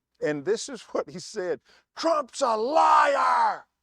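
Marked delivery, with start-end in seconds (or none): 2.0-3.6 very high, shrill screaming with liar drawn out. Retelling what a man screamed at the speaker: imitating someone screaming. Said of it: "But he screams at me".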